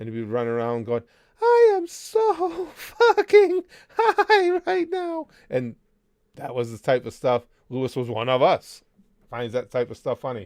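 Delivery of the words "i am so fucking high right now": very high, slow, squeaked-out voice. Recalling playing Call of Duty as Mickey, in the Mickey Mouse voice. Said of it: "I would do be playing in the Mickey Mouse voice".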